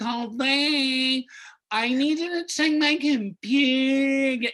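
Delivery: irritating voice. Showing how to play the coworker Shyla: annoying voice. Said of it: "give her an annoying voice".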